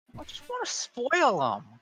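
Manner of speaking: New Jersey mother voice.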